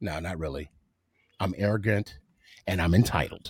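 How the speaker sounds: put-on very deep, low, sinister, villainous evil voice. Making a joke, then taking it back: put-on evil tone. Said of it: "now that sounded evil".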